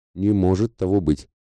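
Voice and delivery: ordinary talk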